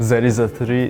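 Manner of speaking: Russian accent. Describing the Russian English stereotype in movies, in a stereotypical Russian accent. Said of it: "the Russian English pronunciation".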